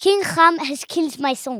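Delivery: soft French accent, done for fun. Retelling a story, voicing a man's cry about his son, in a French accent. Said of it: "I can do my French accent too".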